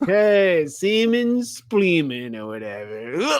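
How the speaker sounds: very high, loud, put-on drunk voice. Recalling practicing it out loud while watching, the speaker does a put-on drunk voice. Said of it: "practiced my drunk voice out loud".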